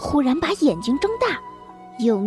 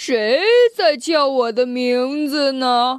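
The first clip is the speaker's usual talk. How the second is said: deep low voice, louder; 5 dB louder than usual. Narrator reading a voice from the sky that startles two forest characters, deep low voice. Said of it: "空中传来了一个很低沉的声音".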